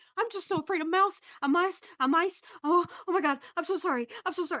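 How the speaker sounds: panicky apologetic pleading. Voicing a character who follows others while waving her hands: panicky apologizing.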